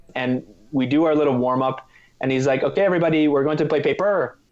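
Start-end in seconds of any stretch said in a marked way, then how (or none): 2.7-4.3 put-on, hilarious French accent. Retelling the first warm-up instruction from a man leading volleyball practice; put-on French accent. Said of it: "the guy's got a hilarious French accent".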